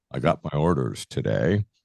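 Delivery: great, low, grand, dramatic delivery. Retelling how dad came home announcing his new orders, imitating dad's great dramatic voice. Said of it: "he would say in this great dramatic voice".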